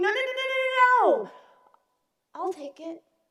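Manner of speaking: shrill, high screaming, "no" drawn out long. Retelling stopping a worker with a very large shovel, retelling own scream.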